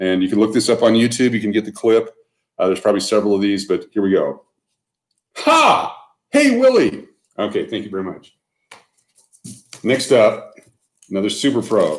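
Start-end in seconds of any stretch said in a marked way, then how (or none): 5.4-7.1 very high, squeaky alien puppet voice. Speaker showing items breaks into an impression; ALF impression. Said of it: "an impression of Alf".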